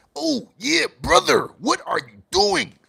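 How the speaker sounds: very high, rough, over-the-top exaggerated voice. Calling out DeAndre Ayton after a bad game, in a Macho Man voice. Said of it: "I got that kind of voice".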